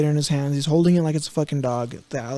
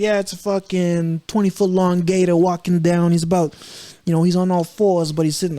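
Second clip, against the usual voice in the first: casual put-on New York accent; 2 semitones higher than usual. Imitating Florida people calmly describing a passing gator: New York accent. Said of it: "that's a fucking New York accent".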